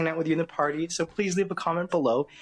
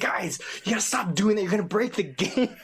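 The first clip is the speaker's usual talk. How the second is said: play-acted mild panic, urgent and pleading; 4 semitones higher than usual. Retelling how Gigs reacted as the kids hammered a game button; imitating Gigs panicking. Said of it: "Gigs was sort of having a little panic".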